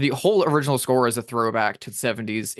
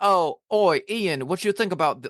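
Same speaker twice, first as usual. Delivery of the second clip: poorly done, clumsy put-on Cockney accent; 6 semitones higher than usual. Imagining people addressing the writer of James Bond, in a bad Cockney accent. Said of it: "like my Cockney's bad".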